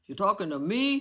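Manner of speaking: loud, tough-guy mobster voice. Joking about how a mafia guy would say it: mafia guy voice. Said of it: "Like a mafia guy?".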